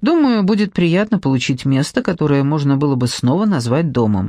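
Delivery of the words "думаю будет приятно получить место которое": usual speaking voice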